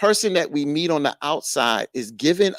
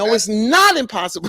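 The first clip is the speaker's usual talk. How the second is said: raised, higher-pitched voice; 7 semitones higher, 4 dB louder than usual. Pushing back on the other speaker's point in an argument, with a raised voice. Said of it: "I'm sorry to raise my voice".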